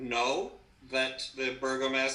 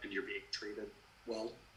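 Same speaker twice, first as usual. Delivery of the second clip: lowered, low, hushed whisper; 4 semitones lower, 12 dB quieter than usual. A player voices their character lowering her voice to ask something: whisper. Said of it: "lower her voice to more of a whisper".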